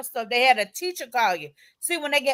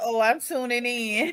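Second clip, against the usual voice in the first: normal talking voice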